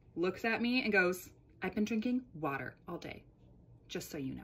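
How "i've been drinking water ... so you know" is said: imitated deadpan, tossed off quick and low-key. Retelling what a client told them about getting home, imitating a deadpan reply.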